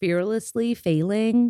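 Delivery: attempted American accent with a twang. After praising the other speaker's American twang, saying the title again: trying an American accent. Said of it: "I want to try and say it American".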